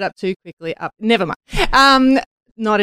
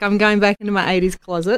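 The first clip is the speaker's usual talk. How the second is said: usual speaking voice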